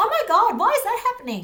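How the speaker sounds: shrill, excited voice, very loud and very high. Giving an example of how their voice used to go: raised voice. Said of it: "when I was excited or I wanted to ask a question, I, my voice would raise. And I'll give you an example".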